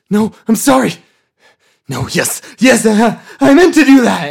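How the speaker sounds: very high, very loud, shrill, human-sounding monster voice. Voicing a creature that speaks in a human voice after an attack: monster speaking in a human voice. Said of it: "you hear a human voice come from it".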